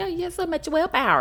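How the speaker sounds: high, mocking voice with exaggerated approval.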